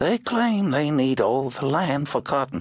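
thin, whispering voice. Narrator reads an old man's line by the river in a thin whispery voice. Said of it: "His voice was thin and whispery".

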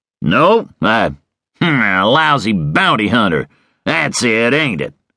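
slow, drawn-out, scornful and disgusted delivery. A man answers the outlaw who asked if he is a lawman, in disgust. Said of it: "Webster said in disgust".

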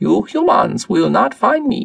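raspy, rasping voice. Narrator reading a story, the alien captain answering the humans, raspy. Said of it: "it rasped".

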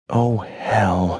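quiet, softly sighed words. A mother in her stopped car, with her son present: quiet sigh. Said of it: "she sighed quietly".

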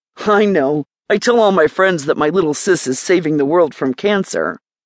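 plain reading voice

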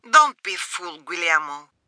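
put-on rough, harsh, raspy voice with Colombian accent. Narrator voicing a woman answering guillermo, in a harsh smoker's colombian voice. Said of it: "in her harsh smoker's Colombian voice".

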